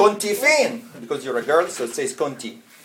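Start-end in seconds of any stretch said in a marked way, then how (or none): 0.0-0.9 put-on Egyptian Arabic accent, pitched up, calling out. Quoting her mother's question to her, in an egyptian accent. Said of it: "in the Egyptian accent".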